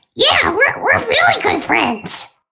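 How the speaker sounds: very high character voice, swooping pitch. Answering whether Tails and Toad would be friends: Toad voice. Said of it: "you truly captured that Toad voice".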